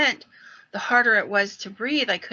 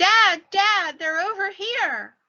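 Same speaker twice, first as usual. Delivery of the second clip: very high, drawn-out crying scream; 11 semitones higher than usual. Retelling how a boy burst off the trail calling: imitating a boy screaming. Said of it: "and he screams".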